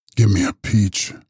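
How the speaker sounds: harsh, hollow, cavernous voice from deep within. Narrator reads a man's line from the depths of an armchair, harsh and hollow. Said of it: "Harsh and hollow, the voice issued cavernously".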